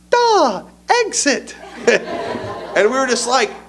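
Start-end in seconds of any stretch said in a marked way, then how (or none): 0.1-1.5 put-on very high-pitched young child's voice. Retelling how a kid who can't read yet answered, in a real high voice. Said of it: "he had a real high voice".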